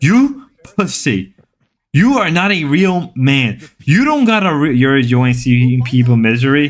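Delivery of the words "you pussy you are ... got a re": blunt, broken caveman speech. Imitating Pyro, who always talks like a stereotypic caveman: imitating Pyro's caveman talk. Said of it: "Pyro always talk like a caveman".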